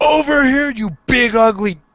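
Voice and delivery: shouting. Voicing a character who magically amplifies their voice to lure giants: yelling at giants. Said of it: "I'm going to yell".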